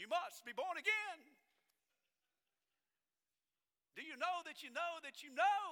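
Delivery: small, very high, preachy preacher voice. Recalling witnessing to someone, the speaker gets a little evangelist voice going. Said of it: "You get that little evangelist voice going".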